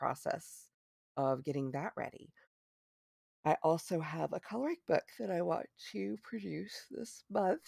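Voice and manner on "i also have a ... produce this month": pitched-up words stretched out through a yawn. Speaker telling listeners about plans while admitting tiredness, talking through a yawn. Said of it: "I was talking through a yawn".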